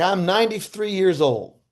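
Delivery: put-on elderly Southern accent, old woman voice. Speaker retells what an old Southern woman said; imitating old Southern woman. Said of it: "there's an old old Southern woman".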